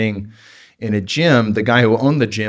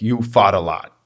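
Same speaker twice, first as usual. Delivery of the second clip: put-on heavy New York accent, laid on thick. Retelling what the speaker's strength coach told him; thick new york accent. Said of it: "he's got a thick New York accent".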